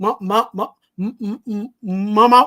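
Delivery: very slow, halting stammer with repeated sounds. Recalling running inside to ask mom for ice cream money, imitating own stuttering. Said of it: "I'm stuttering".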